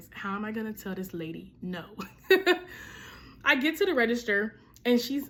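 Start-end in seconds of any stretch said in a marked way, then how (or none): 0.1-1.8 acted-out whisper, quieter. Recounting buying a wedding dress, retelling a whisper to friends in the back. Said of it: "I'm whispering to my friends".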